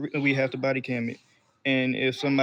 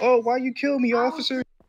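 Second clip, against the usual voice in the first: put-on scream, pitched very high; 11 semitones higher, 4 dB louder than usual. Retelling what an arrested person screamed out: imitating someone screaming. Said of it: "screamed out".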